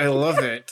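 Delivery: mock delivery forced through clenched, gritted teeth. Joking about pretending to enjoy a show: mock gritted-teeth delivery. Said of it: "through gritted teeth being like".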